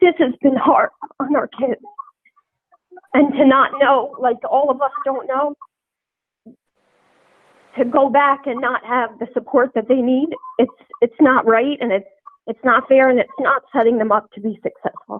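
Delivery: overcome, speaking through welling emotion. A parent pleads for the support their children need, emotional. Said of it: "I'm sorry, I'm, I'm emotional".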